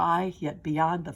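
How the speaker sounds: ordinary delivery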